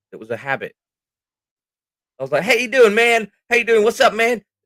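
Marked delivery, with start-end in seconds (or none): 2.4-4.4 put-on American accent, very high-pitched. Retelling the way he used to talk on stream: put-on American accent. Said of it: "That American thing was where, how I started off".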